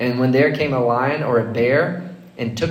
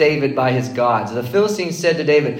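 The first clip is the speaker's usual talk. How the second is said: plain reading voice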